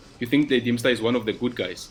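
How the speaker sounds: ordinary delivery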